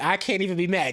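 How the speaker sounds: ordinary talk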